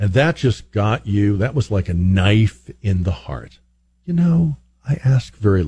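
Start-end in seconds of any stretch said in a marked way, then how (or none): 4.9-5.7 lowered, trembling, quavery voice. Acting out a mom's line to her kids, imitating mom's low quavering voice. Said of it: "lower her voice, put a little bit of a quaver in it".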